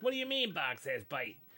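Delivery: fake Chicago guy voice. Storyteller voicing a little guy off to the side of the street, Chicago guy voice. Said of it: "you doing Chicago guy voice".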